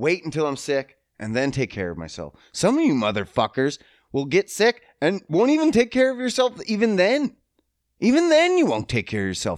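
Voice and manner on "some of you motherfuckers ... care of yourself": heated, worked-up rant, voice very high. Speaker addressing the audience, worked up and ranting. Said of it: "I got worked up there".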